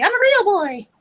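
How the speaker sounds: very high voice going up until it cracks. Joking along with another speaker: Pinocchio voice. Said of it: "I was trying to do the Pinocchio voice".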